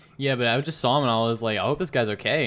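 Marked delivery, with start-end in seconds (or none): none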